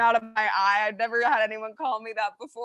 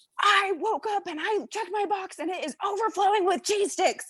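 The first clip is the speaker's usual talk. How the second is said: put-on angry, fuming voice with pitch raised up; 9 semitones higher than usual. Retelling a phone call from a customer: imitating a fuming customer.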